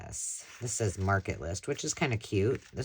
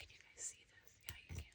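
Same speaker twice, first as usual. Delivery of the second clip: rushed, quick, hushed whisper under the breath. Asking viewers if they can see something: whispering. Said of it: "Why am I whispering?".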